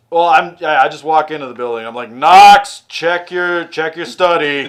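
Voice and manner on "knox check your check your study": loud, forceful yelling. Describing walking into the building, the speaker retells a yell. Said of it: "I'm just yelling like".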